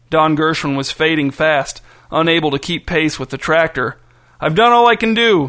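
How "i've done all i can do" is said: loud, winded, breathless high shout. Unable to keep pace with a tractor, stopping and doubling over, shouted, out of breath. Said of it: "he shouted, stopping and doubling over to catch his breath".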